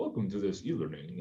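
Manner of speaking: formal airline pilot cabin announcement voice. Mocking the old style of e-learning narration: imitating an airline pilot announcement. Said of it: "talking like an airline pilot".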